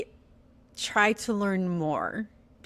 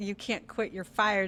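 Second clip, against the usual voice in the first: ordinary talk, nothing marked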